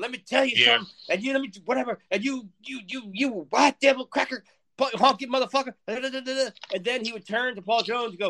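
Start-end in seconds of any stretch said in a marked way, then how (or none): 0.0-5.7 put-on angry ranting voice, higher and faster.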